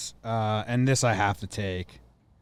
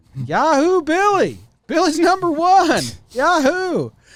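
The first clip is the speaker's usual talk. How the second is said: mock very high, very loud, swooping, drawn-out cheer; 10 dB louder than usual. Quoting Norm cheering for Billy: Norm's fake cheering yell. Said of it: "It sounds like just such sarcastic yelling, like cheering".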